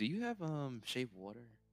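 hushed half-whisper. Asking Onyx a question in character: half-whispering. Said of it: "I'm gonna whisper to Onyx".

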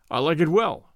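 ordinary talk

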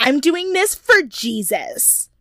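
scared, defensive, high and drawn-out. Retelling her answer when asked why she is here: imitating a defensive tone. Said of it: "she says it so defensively".

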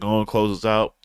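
ordinary talk, nothing marked

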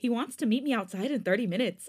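plain

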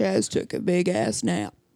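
very deep, very low voice, dropped to the floor. Asked to finish the story in his deepest voice. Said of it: "in his deepest voice?".

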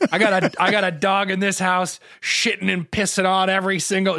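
mock-angry voice. Retelling what she said while she was mad, imitating someone angry. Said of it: "She was so mad".

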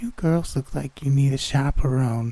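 gravelly, high, almost sing-song lilt. Reading a scary story, a masked figure speaks: gravelly high-pitched sing-songy voice. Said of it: "almost sing-songy voice that said".

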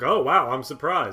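put-on overly surprised tone. Critiquing a performer whose snark doesn't land, imitating his very surprised delivery. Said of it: "But he does it like very surprised".

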